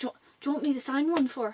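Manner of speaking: bad put-on Irish accent. Retelling meeting him at a signing, quoting him in a really bad Irish accent. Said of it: "this is my really bad Irish accent".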